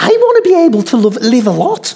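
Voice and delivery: put-on Scouse accent, spoken plainly. Retelling a scene where a woman's thought answers a man's plans, Liverpudlian accent. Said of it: "the thought in her Liverpudlian accent".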